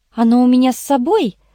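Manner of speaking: ordinary delivery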